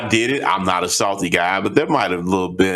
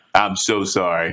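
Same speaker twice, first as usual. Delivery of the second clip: put-on very polite tone. Retelling how an opponent apologized after winning: imitating a very polite apology. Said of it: "he apologized in the most polite way".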